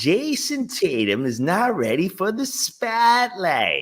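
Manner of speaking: put-on, swooping Boston local accent. Speaker reading out a quote, done in a put-on Boston accent. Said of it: "I just like a Boston accent".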